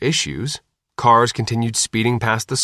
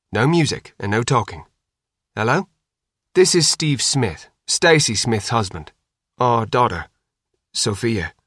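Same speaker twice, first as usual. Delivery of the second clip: usual speaking voice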